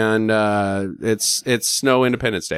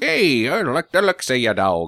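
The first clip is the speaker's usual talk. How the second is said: put-on Australian accent. Retelling a story, the speaker voices Mr. Gray flagging a truck: Australian accent. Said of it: "whoa, I went Australian there".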